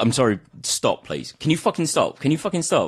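put-on irritated man, angry annoyed scolding outburst. Retelling how a soaked man at the next table complained: imitating an angry man. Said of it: "the guy's just giving him grief".

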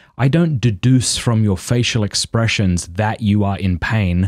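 ordinary talk, nothing marked

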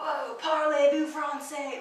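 French spoken in a surfer dude voice. Describing the French dub, the speaker mimics its Jagged Stone: surfer-dude French. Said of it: "in a really surfer, skater dude way".

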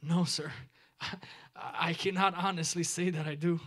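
trembling voice. Retelling a young man's answer to the evangelist: retelling a trembling voice. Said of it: "responded with a tremid voice".

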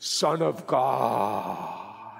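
very low, deep, manly, vibrating godly voice. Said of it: "have a deep, manly, godly voice".

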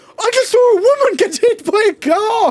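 very high, loud shout. A man breaks into an argument about vaping in the apartment, shouting. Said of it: "he shouted".

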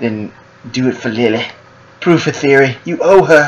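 cartoon-style voice. Reading a script's dialogue aloud: South Park voice. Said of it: "I'm using South Park voice".

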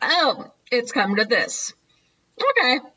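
put-on slow, barely fazed drawl. Retelling a TV scene as Leon walks in: imitating Leon, barely fazed. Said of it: "barely fazed, really".

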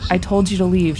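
usual speaking voice

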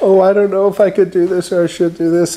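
mock unsure, doubtful voice. Quoting a hesitant woman as someone tries to sell her an easel, imitating hesitance. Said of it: "And she was like really hesitant".

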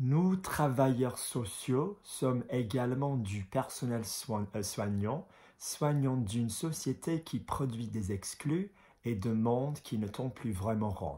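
slow, deliberate, measured reading aloud. Speaker reads a French statement aloud section by section, slow careful reading. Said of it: "I'll read it slowly".

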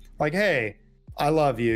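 plain

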